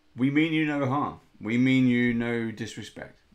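bold heroic voice. Player character, sword out, facing a transformed creature: bravest voice. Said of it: "And I will say in my bravest voice".

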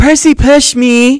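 shrill, very high, loud shrieking scream. Sitting in a fountain, a girl calls out, screaming. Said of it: "sitting on her butt in the fountain screaming".

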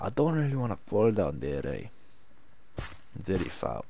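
put-on Russian accent in English. Talking alone, the speaker tries out a Russian accent. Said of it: "Now I can do the Russian accent".

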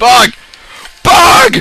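loud, high-pitched yell of alarm.

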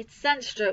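ordinary delivery

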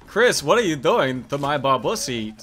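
usual speaking voice

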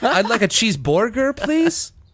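put-on non-American foreign accent, pitched very high. Teasing the other speaker by ordering a cheeseburger: mock accent of other speaker. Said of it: "Am I saying it right?".

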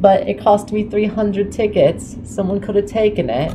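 put-on young child voice, pitched way up.

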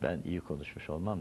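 normal talking voice

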